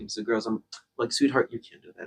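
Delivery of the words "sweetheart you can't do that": much softer, soft, sweet voice. Speaker acts out redirecting the girls, imitating own soft voice. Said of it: "voice is so much softer now".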